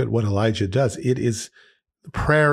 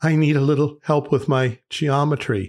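mock trembling, quavering, shaky voice; 4 semitones higher than usual. Telling a joke, as a man speaking to a summoned demon: imitating a shaking voice. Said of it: "he shaking voice says to the demon".

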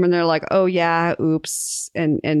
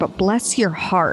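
put-on Southern accent, much slower; 2 semitones higher than usual. Reacting to the other speaker's air conditioning being off, put-on Southern accent. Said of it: "I'm going to be southern for a second".

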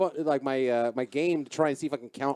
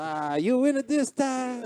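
put-on Italian accent, pitched high; 10 semitones higher than usual. Retelling a man shuffling beside them on the sidewalk, the speaker does an Italian accent. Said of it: "He kind of became Italian, but I don't have a Filipino accent".

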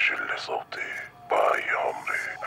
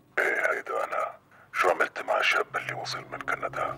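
high, strange, disguised voice; 8 semitones higher than usual. Answering someone who asks if it is you, in a strange disguised voice. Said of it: "ليه عم تحكي لي بهالصوت؟".

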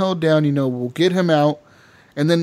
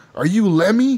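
put-on drunken slurring, higher and slower; 5 semitones higher than usual. Speaker retells asking each person whether they are Lenny, with mock-drunk slurred words. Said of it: "like you're all slurring your words".

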